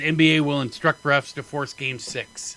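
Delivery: ordinary delivery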